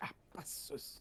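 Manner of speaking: hissed under the breath. Asking how a mild swear word should be said, hissed under the breath. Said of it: "hissed under your breath".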